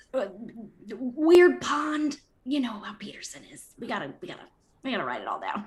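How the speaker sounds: hushed, half-whispered aside in a character voice. Voicing Joe half-whispering into another character's ear: half-whispering in character. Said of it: "Joe whispers in your ear".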